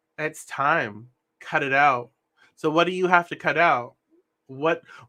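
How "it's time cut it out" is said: plain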